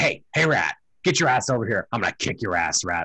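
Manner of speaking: jeering, goading, taunting tone. Retelling a movie scene where the gingerbread man leans over a rat, taunting.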